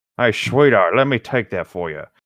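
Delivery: put-on voice of an old man. Reading a story aloud, voicing the old man: old man voice. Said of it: "what voice should we give the old man?".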